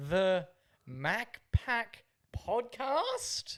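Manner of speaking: each word rising with a questioning lift. Imitating a woman who wound down her window, each word rising like a question. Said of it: "with every word that she said, there was an extra inflection on like a question".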